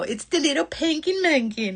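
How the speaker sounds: fond, doting motherly inflection. Explaining how a friend's nickname has to be said, use the mom inflection. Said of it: "You have to say it with the mom inflection".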